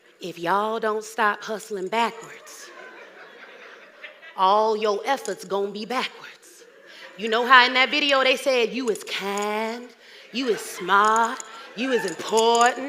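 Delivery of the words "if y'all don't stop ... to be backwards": low, hushed, pulled-back whispered delivery. Speaker addressing an audience, told by a vocal coach not to yell, whispering. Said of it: "Let me whisper something".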